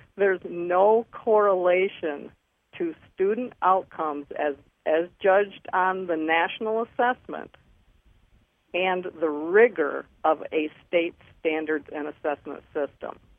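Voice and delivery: said really slowly, deliberately. Speaker making a key point in a discussion, said really slowly. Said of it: "I want to say that really slow".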